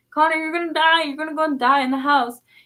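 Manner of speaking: mock tearful, pleading, crying voice. Retelling begging a brother not to go in the house, imitating past crying.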